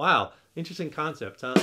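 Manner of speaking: sarcastic, ironic tone of feigned amazement. Explaining that a guitar's volume knob turns the volume down: sarcastic. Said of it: "I'm kind of being sarcastic".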